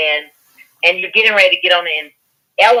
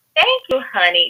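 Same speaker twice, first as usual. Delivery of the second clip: pitched-up rich auntie voice with Southern charm; 5 semitones higher than usual. Speaker explains how they handle telling people off, in a rich auntie-ish voice. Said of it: "in a very rich auntie-ish type of way".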